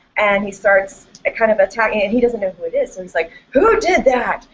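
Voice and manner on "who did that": high, loud angry yell. Retelling a professor's reaction to a yawn in class: imitating a professor yelling. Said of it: "his voice gets really loud".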